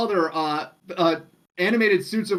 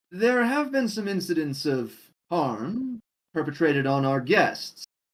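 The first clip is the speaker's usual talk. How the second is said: strange, odd, mysterious voice close by the ear; 2 semitones lower than usual. Voicing a strange voice that speaks by a player's ear: strange voice by the ear. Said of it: "the voice seems to pause for a moment and says".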